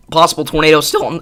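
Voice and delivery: voice cracking, breaking mid-phrase. Giving a live tornado warning to listeners, the voice cracking. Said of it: "that was a bad voice crack".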